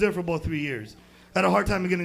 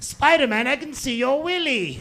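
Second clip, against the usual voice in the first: put-on small child's high little voice with British accent; 7 semitones higher, 4 dB louder than usual. The speaker, dressed as spider-man at a party, retells a kid's remark: little british kid voice. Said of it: "this little British kid comes up to me and goes".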